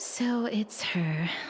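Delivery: let down, deflated, disappointed. Playing a game, recognizing the character who has just appeared: disappointed. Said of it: "why do you sound so disappointed?".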